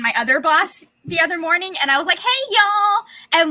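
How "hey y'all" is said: put-on Southern accent slipping out, pitched up. Speaker retells greeting two bosses early one morning: put-on Southern accent. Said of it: "Like it was like Southern".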